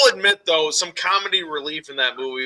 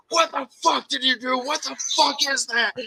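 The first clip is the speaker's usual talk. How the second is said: freaked-out, very high, scared shriek; 10 semitones higher, 4 dB quieter than usual. Retelling how he screamed at his brother: imitating someone screaming. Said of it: "He starts screaming at his brother".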